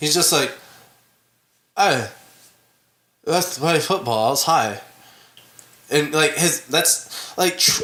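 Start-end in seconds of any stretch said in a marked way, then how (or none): 1.8-4.8 put-on mumble, mouth barely moving. Imitating a movie actor's line: talking without moving the mouth. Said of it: "try to talk without moving your mouth".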